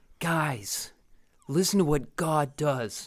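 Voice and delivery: slow, earnest youth preacher voice. Imitating the narrator of an audio Bible: earnest youth pastor voice. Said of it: "He's like".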